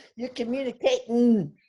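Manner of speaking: imitated, put-on Texas accent. Trying the other speaker's retold line: imitating a Texas accent. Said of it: "in his Texas accent".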